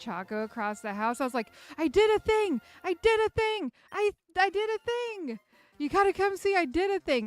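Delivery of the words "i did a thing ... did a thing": screaming, much higher and louder. Retelling screaming to someone across the house when something popped up; retelling a scream. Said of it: "I started screaming".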